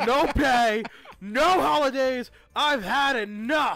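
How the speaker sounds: put-on drunk-sounding voice. Reading a prisoner's line aloud after being told: drunk voice. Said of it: "you gotta sound more drunk".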